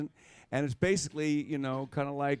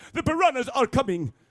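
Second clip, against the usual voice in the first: very high, loud, every word hit hard; 11 semitones higher, 6 dB louder than usual. Imitating an actor delivering a line on set: Christopher Lloyd impression. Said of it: "who always talks like this".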